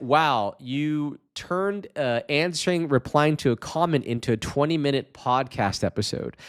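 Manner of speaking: ordinary talk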